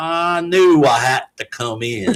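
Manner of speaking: very slow, lazy put-on southern drawl. Retelling what the attending said on arriving: imitating a southern accent. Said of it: "he comes in with a southern accent".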